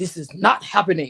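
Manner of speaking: loud, deep, fed-up, furious voice. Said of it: "the angry woman syndrome going".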